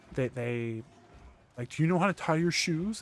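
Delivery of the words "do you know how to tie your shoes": put-on high, patronizing, condescending baby talk. Imitating people who talk down to the speaker when asked for help: mocking condescending baby voice. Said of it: "They use the baby voice".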